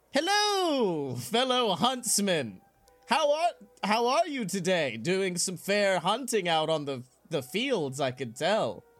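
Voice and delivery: said out loud, slowly. Retelling how someone greeted hunters in camo, retelling a loud greeting. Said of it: "actually not quietly, just goes".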